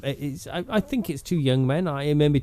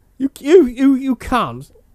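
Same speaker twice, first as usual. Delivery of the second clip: put-on cockney voice, higher and louder; 11 semitones higher, 8 dB louder than usual. Imitating an EastEnders character saying can't: Den Watts impression. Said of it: "I'm Daddy Den".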